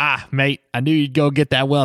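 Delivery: clumsy, bad, put-on Australian accent. Describing a scene, voice another character's line in a bad Australian accent. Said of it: "Apologies to any Australian listeners".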